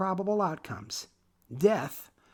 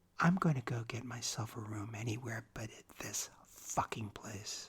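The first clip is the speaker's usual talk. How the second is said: very quiet, low, hushed murmur; 8 semitones lower, 10 dB quieter than usual. Reading a story aloud, a character speaks so no one hears: very low voice. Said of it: "In a very low voice".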